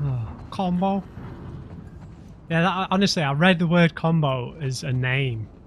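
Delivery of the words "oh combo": put-on, puzzled Liverpool Scouse accent. Imagining someone saying a film character's name: scouse accent. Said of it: "saying it in a Scouse accent".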